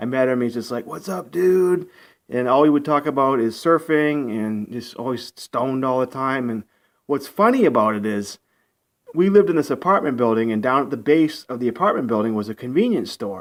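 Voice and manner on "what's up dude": put-on California surfer dude accent. Imitating a roommate from California: imitating a California surfer accent. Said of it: "He had the surfer accent".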